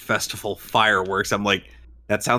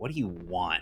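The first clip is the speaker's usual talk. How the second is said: fed-up, exasperated tone; 3 semitones lower, 10 dB quieter than usual. Retelling how Lulu shows up in an argument: imitating Lulu sounding fed up. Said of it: "just fed up with both of them".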